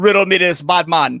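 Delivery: loud, booming, belted-out Jamaican accent. Sharing a phrase stuck in the speaker's head, in a jamaican accent. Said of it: "in a Jamaican accent".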